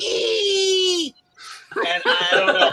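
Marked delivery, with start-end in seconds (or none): 0.0-1.1 put-on long, very high-pitched, drawn-out startled shriek. Retelling how a wife screams one letter at a bug: imitating wife's scream. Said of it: "and she screamed".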